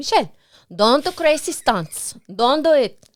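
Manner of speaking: put-on loud, high, heavy thick Mexican accent. Speaker imitates her mom calling her, imitating mom's thick mexican accent. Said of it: "she has a very thick uh, Mexican accent".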